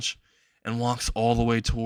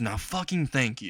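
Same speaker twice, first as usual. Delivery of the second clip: plain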